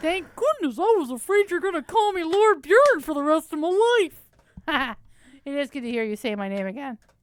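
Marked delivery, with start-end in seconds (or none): 0.0-5.0 high, loud, dumb-sounding talking horse voice. Voicing the character answering Jane, Ben's stupid horse voice. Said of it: "I'm gonna pretend Ben put on a stupid horse voice".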